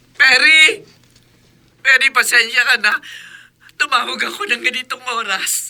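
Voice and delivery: speaking while crying. A mother calls Perry late at night, crying on the phone. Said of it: "Bakit umiiyak kayo?".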